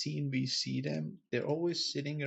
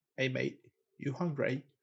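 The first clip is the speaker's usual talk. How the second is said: sudden put-on British accent. A speaker greets another person, putting on a British accent. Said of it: "Why the fuck are you doing a British accent?".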